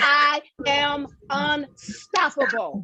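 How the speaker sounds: spoken with full, sincere conviction. Leading a group affirmation, showing how to say it: with conviction. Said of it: "you gotta say this like you believe it".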